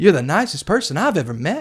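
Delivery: put-on laid-on southern country accent. A worker quotes what visitors from the north tell them; imitating a southern accent. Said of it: "I don't know why I'm doing a southern".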